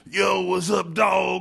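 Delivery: loud, high, put-on straight-out-of-Compton street-slang voice. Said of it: "it sounds like he's straight out of Compton".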